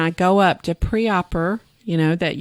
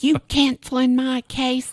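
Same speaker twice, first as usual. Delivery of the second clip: put-on scream, higher; 6 semitones higher than usual. Retelling how a surgeon reacted to a cancelled case: imitating someone screaming. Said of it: "He is just screaming".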